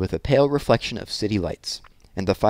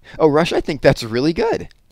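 eager, enthusiastic, high, swooping exclamation; 6 semitones higher, 4 dB louder than usual. Reading a story aloud, one character responds to another's idea: enthusiastic cry. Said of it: "cried Randy enthusiastically".

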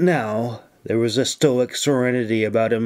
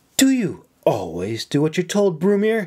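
pointed, reproachful, pitched up, swooping; 6 semitones higher than usual. Cora, reproachful over a letter, questions brumir, scowling. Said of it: "she scowled".

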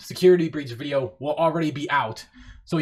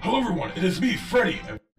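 put-on character voice with reverb; 5 semitones higher than usual. Playing back an edited clip with reverb added: Glamrock Freddy voice. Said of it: "doing Glamrock Freddy's voice".

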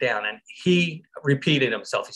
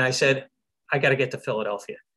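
plain

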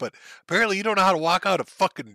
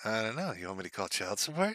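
low, very quiet, self-satisfied smug tone; 5 semitones lower, 12 dB quieter than usual. Repeating what a child said, imitating how smug he sounded. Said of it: "I love how smug he sounded".

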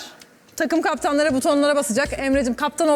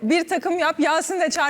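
ordinary talk

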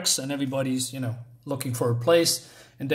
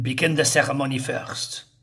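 bad put-on German accent. Retelling a film scene's German characters: bad German-accented English. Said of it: "my bad English and German impression".

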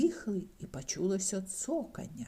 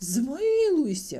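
very loud, shrill, high, desperate begging cry; 8 semitones higher, 9 dB louder than usual. Facing a howling ghost rattling its chains, a man speaks, begging. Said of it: "благав Скрудж".

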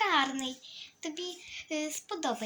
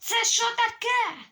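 shrill yell, very high, very loud; 9 semitones higher, 8 dB louder than usual. A mother reacts to her daughter's surprise, shouting. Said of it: "мам, не кричи".

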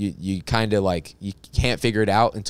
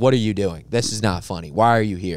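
mock harsh, scolding voice. Retelling how an improv teacher cut scenes: imitating a harsh improv teacher. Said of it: "she would cut the scene, like, right away and just be like".

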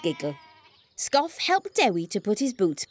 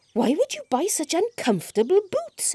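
puzzled, confused, very high-pitched voice; 10 semitones higher than usual. Narrator reading Scoff's question to Dewi about his boots, confused.

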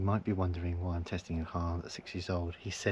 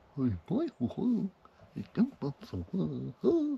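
very high, weird, swooping put-on TV presenter voice; 11 semitones higher, 4 dB louder than usual. Speaker imitates a man's voice once the camera rolls, weird put-on presenter voice. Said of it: "When he puts on his presenter voice".

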